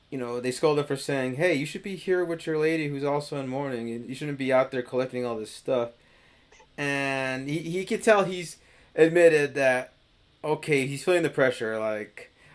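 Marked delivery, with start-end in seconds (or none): none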